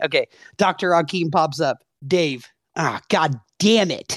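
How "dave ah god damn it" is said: imitated annoyed groaning. Imitating a friend reacting each time a character appears: imitating Dave annoyed. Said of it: "my impression of Dave every time Doctor Hakim came on screen".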